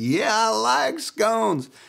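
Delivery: fake Arkansas country accent. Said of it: "She was from deep Arkansas as well".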